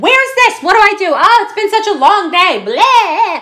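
very high, loud, top-of-the-lungs shouting. Retelling how a mom burst into a quiet voting room: imitating a mom yelling loudly. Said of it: "she is yelling at the top of her lungs".

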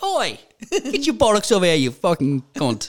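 put-on Cockney accent. Describing a trashy brat, imitating her in a put-on cockney accent. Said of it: "she kind of speaks like a Cogney".

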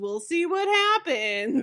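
bright mom voice. Describing the traditional mom response, the speaker does a mom impression. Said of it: "That is a very good mom impression".

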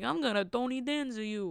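slow, drawled, put-on Italian voice. Retelling a joke told to a sister, in a Tony Danza voice. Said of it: "In the Italian voice".

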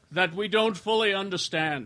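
put-on slight British accent. Acting out a leader's speech to everyone, a little British voice. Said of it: "Except he does it kinda British".

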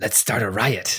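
whispering. Narrator voices a man leaning over to a player, whispering. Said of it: "leans over and whispers to you".

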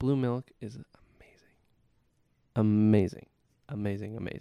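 ASMR style, soft and close. Chatting with others about the milk they tried, ASMR-style delivery. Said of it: "You sound like you said, like, ASMR".

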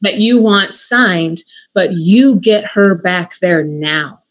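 forceful, unbending, direct and intense insistence. Speaker retelling what they said in the moment, retelling a direct, intense voice. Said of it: "direct, intense voice".

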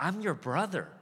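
acted, desperate, high crying-out pleading tone. Retelling a younger brother pleading from a pit: imitating someone screaming at full volume. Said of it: "He's screaming at the top of his lungs".

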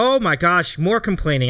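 play-acted, openly plain sarcastic tone. Speaker re-enacts what they said while the group was complaining: retelling a sarcastic remark. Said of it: "like sarcastically".

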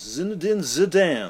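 high, loud, French-style pronunciation. Mocking football commentators saying a player's name: imitating commentators' french pronunciation. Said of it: "when football commentators go".

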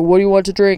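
ordinary talk, nothing marked

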